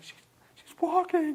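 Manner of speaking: high, slow, tearful words choked out. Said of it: "of course, her mom's crying".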